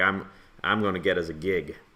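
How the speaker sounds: normal talking voice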